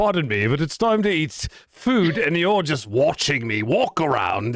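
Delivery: odd, weird put-on British accent. Giving the family cat its voice, in a weird British accent. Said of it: "He started out with like this weird British accent".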